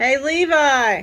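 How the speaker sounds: very loud yell, one word stretched long. Calling out to the one being cleaned up, yelling. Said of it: "I didn't mean to yell".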